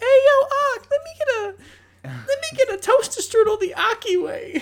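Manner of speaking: put-on very high little kid voice. Acting out a fifth grader who walks in and orders: imitating a fifth grader. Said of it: "a fifth grader will walk in".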